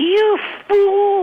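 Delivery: tiny, very high little-voice outburst. Retelling the outburst the speaker heard aimed at Mom, in a little voice. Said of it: "I hear this little voice saying".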